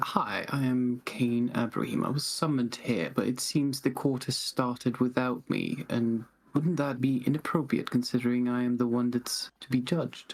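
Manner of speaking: mild, gentle, soft-spoken aside. Cain Abraham addresses one of the guards, speaking softly. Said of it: "softly speak to one of the guards".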